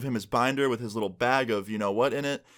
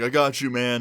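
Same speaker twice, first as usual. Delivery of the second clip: amused, laughing while talking; 3 dB louder than usual. Recounting a classmate's reply after a joke about a possum; retelling laughing while talking. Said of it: "he starts laughing and he's like".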